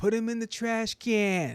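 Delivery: shrill, very loud, high, drawn-out scream. Retelling a lady behind them at midget wrestling: imitating a lady screaming. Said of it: "there was this lady behind that kept screaming".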